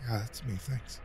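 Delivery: cowed, hushed, soft little half-whisper. Reading a story, a man cowering under someone's intense gaze answers in a half-whisper. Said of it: "He whispered".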